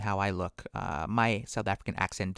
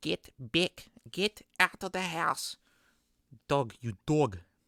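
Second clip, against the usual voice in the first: put-on high-pitched, slow South African accent; 7 semitones higher than usual. Retelling the grandma yelling at dogs that got into the house, south african accent. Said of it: "that's my uh, South African accent that I picked up from my grandma".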